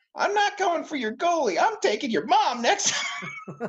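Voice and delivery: put-on very high, unbroken, pre-puberty kid voice. Retelling the other winger's comeback to a threatening player, high-pitched pre-puberty voice. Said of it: "in this high-pitched, you know, pre-puberty voice".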